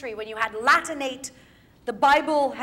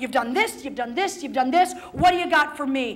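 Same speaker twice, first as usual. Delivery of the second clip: put-on hammering, repeated, quick, defiant accusing tone. Teacher explaining a speech, acting out the character confronting Leontes: acting out a defiant accusation. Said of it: "And she's like".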